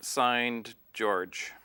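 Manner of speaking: ordinary talk, nothing marked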